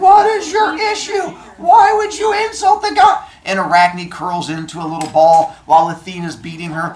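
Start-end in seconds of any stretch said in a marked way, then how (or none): 0.0-3.2 shrill, very high, loud screaming. Retelling a goddess beating a girl with a loom: imitating Athena screaming. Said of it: "she's screaming at her".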